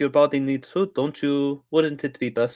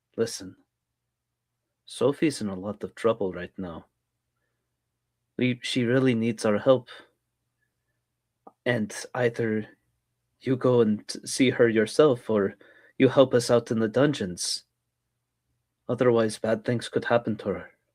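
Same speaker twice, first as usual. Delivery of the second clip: menacing, threatening, lower-pitched whisper; 3 semitones lower than usual. Voicing a character who leans in to a listener: menacing whisper. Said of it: "she's going to lean forward menacingly, like, as if she's, like, whispering this".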